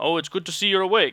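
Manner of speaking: bad partial Russian accent. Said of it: "a bad semi-Russian accent".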